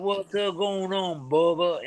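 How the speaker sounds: put-on real slow Mississippi pimp accent. Acting out how the man up the street answers your call, in Rob's real slow Mississippi pimp accent. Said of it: "that real slow Mississippi pimp accent".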